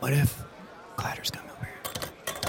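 soft, hushed, conspiratorial whisper.

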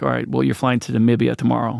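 ordinary delivery

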